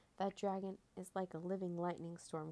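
ordinary delivery

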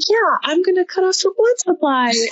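put-on very high, guileless, innocent five-year-old voice. Imagining a five-year-old explaining a choke: imitating an innocent five-year-old. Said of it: "in the most, you know, innocent way that five-year-old kids say anything".

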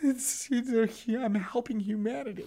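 put-on choked-up voice. Acting out being moved after a kind act: mock weepy. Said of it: "a little weepy?".

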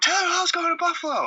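very high, elated shout.

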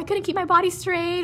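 put-on high little kid voice.

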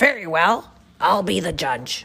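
loud, rough, gruff crocodile voice. Reading a story aloud, the crocodile answers the other animals: gruff crocodile voice. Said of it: "the gruff voice of the crocodile".

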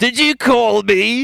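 put-on very high-pitched voice with a Cockney accent. Playing the janitor who was called, an actor asks back in a Cockney accent. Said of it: "You've got this Cockney voice".

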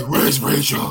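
strained, put-on superhero growl. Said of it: "it sounds like you might take a shit".

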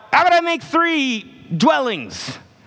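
giddy excited blurt, pitched way up and swooping. Retelling how Peter, losing his mind, blurts it out; acting out an excited blurt. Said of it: "He's so excited that he just blurts out".

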